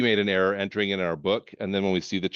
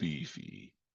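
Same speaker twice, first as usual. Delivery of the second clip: very deep, soft voice, dropped an octave on "beefy"; 9 semitones lower, 14 dB quieter than usual. Explaining how the word should be said, very deep voice on 'beefy'. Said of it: "you got to drop your voice an octave. Beefy. Like that".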